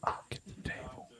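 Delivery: hushed, smooth, breathy whisper, close in the ear. Retelling how a wrestler whispered in the ear during a match: imitating someone whispering. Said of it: "he whispers it in my ear".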